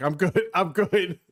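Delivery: slow, drawn-out, choked-up emotional voice. Retelling a friend's reaction to a game ending: imitating an emotional voice. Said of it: "you could hear the emotion in his voice".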